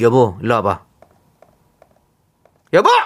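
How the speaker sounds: deep, very low, dropped voice. Acting out a wife suddenly calling her husband over: acting out a wife calling husband. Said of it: "이런 톤 맞는 건가-".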